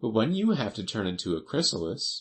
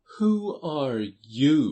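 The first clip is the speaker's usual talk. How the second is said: lazy, drowsy, half-awake voice, high and raised; 7 semitones higher, 5 dB louder than usual. Narrator reads the Caterpillar first addressing Alice, in a languid, sleepy voice. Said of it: "addressed her in a languid, sleepy voice".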